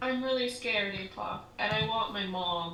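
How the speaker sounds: barely audible, very quiet half-whisper. A character being hugged by a companion, half-whispering really quietly. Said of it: "she's just gonna whisper really quietly".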